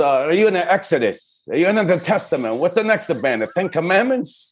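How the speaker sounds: put-on Italian-accented English. Retelling his late dad's joke about his band, imitating Enzo's Italian accent. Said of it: "with the Italian accent".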